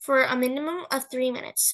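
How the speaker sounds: ordinary delivery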